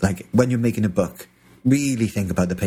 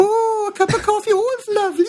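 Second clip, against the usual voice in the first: put-on very high-pitched elderly Welsh lady accent; 3 dB louder than usual. Imitating Tanya, who is never unenthusiastic: old Welsh lady voice. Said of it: "She sounds like an old Welsh lady".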